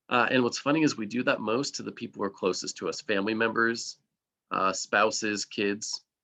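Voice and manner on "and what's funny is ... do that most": plain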